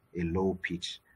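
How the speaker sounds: pitch drops low at end.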